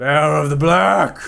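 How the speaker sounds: booming voice, very loud and rasping. Narrating a scene where a voice calls from above the walkway: booming voice. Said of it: "voice booms".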